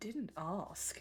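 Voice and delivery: low, quiet muttering under the breath. Voicing a character answering a long speech: muttering under his breath. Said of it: "Casimir mutters under his breath".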